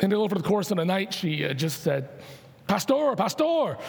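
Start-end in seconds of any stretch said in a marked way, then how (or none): 2.7-3.8 put-on Filipino accent, high and slow. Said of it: "you know, in her accent".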